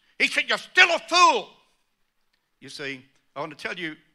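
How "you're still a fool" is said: very high-pitched, very loud shouting yell. Recounting a man's reply after the speaker presented the facts, retelling a shout. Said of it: "shouted out at me".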